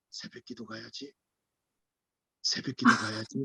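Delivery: whispered, low, deep, mid-low voice. Imitating someone waking the speaker for dawn prayer: low deep voice. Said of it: "중저음으로".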